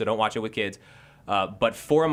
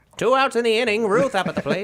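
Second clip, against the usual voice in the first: very high, loud, vintage play-by-play announcer call; 12 semitones higher, 6 dB louder than usual. Calling an imagined Babe Ruth at-bat: old-time baseball announcer voice. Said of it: "what I imagine a baseball announcer sounds like".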